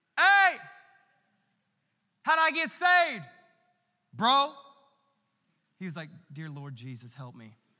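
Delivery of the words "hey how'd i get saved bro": loud, slow, drawn-out yell. Recalling going up to the pastor's husband to ask: retelling a yell. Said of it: "I don't know why I'm yelling".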